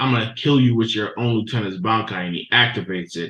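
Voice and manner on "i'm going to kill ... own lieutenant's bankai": ordinary talk, nothing marked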